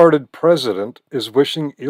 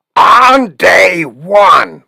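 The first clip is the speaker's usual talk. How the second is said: horrible, very loud, high, put-on, badly belted; 5 semitones higher, 9 dB louder than usual. Quoting a politician's promise: horrible Trump impersonation. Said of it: "That's a horrible Trump impersonation".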